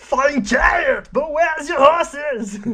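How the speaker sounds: very loud, shrill, high-pitched character voice, shouted. Doing a favourite line from the Arnold Schwarzenegger alphabet: Arnold Schwarzenegger impression. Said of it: "the Arnold Schwarzenegger alphabet".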